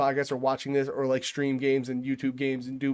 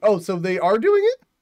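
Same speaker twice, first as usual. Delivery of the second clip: squeaky, high voice cracking upward; 5 semitones higher, 4 dB louder than usual. Hearing the remake is confirmed, the speaker reacts with a squeaking voice. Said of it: "Why did my voice squeak?".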